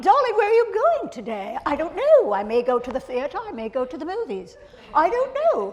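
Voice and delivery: very high, sing-song voice. Speaker imitates how the mother and aunt talked, in a very high voice. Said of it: "spoke in very high voices like this".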